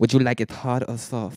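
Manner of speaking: weak, fake, put-on Spanish accent. Retelling what a dude asked him, in a weak put-on Spanish accent. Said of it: "I can't even do a Spanish accent real well".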